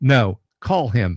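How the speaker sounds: dead serious, deadpan, insistent delivery. Retelling someone insisting the speaker make the call, retelling a deadpan demand. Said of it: "deadpan, just completely grave, serious".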